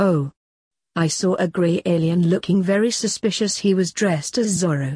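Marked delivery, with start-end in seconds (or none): none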